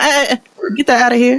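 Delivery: high-pitched, dismissive brush-off. Retelling how the child brushed her off: imitating a child dismissing her. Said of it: "she threw her finger up at me like".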